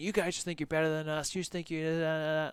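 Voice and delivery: put-on aggrieved, heated, accusing tirade. Retelling an acquaintance yelling at a friend at a party: imitating someone yelling. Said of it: "starts yelling at my friend and saying".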